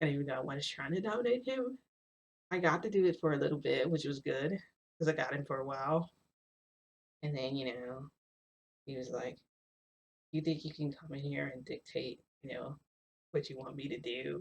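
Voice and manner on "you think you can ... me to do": imitated, mock-seductive voice. Retelling what he said while playing with you, imitating a seductive voice. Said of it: "He said it in like a seductive voice".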